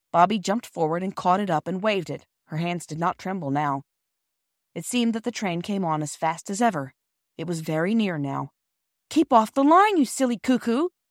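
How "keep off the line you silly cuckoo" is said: fierce, raised and high. As the train draws near, Peter speaks to Bobby fiercely. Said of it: "said Peter fiercely".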